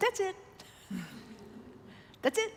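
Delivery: little, hushed, soft whisper voice. Retelling what a man told the speaker, quoting him in his little voice. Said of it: "in his little voice".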